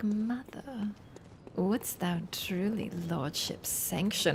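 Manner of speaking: put-on, sultry, very sexed-up seductive voice. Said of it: "super sexed and he's like".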